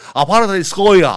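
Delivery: loud, posh put-on Madrid accent. Retelling a beggar story, the man answers in a posh Barrio de Salamanca accent. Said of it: "así con este acento del barrio de Salamanca".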